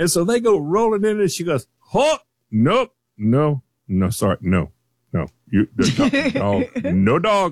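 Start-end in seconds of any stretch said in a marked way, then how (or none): 1.8-7.5 curt put-on German accent, slow and swooping. Retelling a store door checker refusing a dog: imitating a German accent. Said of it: "she has a German accent and she is a no-nonsense woman".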